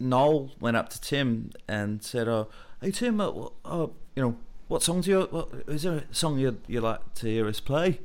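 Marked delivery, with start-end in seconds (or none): 2.3-8.0 put-on Liverpool accent, higher and faster. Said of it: "that's an awful Mancunian accent".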